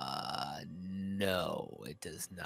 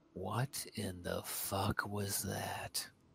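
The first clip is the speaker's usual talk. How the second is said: put-on character whisper, higher pitch; 4 semitones higher than usual. Describing Farthnar looking to the group, speak as Farthnar whispering. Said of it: "and just kind of whispers".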